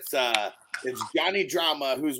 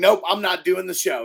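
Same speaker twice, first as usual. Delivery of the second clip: furious, fed-up, loud and pitched-up, pissed off; 5 semitones higher, 5 dB louder than usual. Retelling how a losing ping pong player quit the show: imitating someone pissed off. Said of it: "super fucking pissed off".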